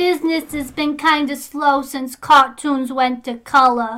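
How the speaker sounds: very high-pitched cartoon voice. Doing an impression for the others: Betty Boop voice. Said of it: "That's a really good Betty Boop".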